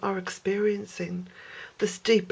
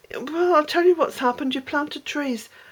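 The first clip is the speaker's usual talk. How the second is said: mock snide know-it-all sarcasm, pitched up; 6 semitones higher than usual. Imitating a commenter's message about the trees: imitating a sarcastic commenter. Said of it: "the sarcastic little twit".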